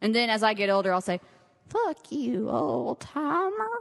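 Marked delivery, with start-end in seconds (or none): 1.7-3.7 put-on high, creaky voice of an elderly woman. Joking about a show sign-off when older, in an old lady voice. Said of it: "That's my old lady voice".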